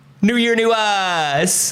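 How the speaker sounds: fake high voice. Opening a morning show with a co-host: put-on higher voice. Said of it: "making your voice higher".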